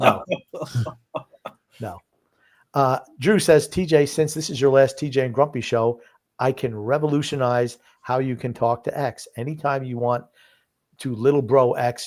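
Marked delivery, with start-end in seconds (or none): none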